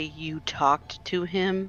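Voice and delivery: very slow, low, near-growled hush. Showing how the line will be delivered: very quiet lowest voice. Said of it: "as quietly as she possibly can and in the lowest voice".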